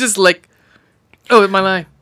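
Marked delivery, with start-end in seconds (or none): 1.3-1.8 mock expressionless flat monotone delivery. Imitating the sheriff in the film: imitating an expressionless monotone.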